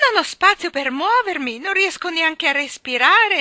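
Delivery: shrill, very high, very loud shout. Narrator voicing Miss Andrew as her cage rises into the air: shouting. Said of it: "Gridò".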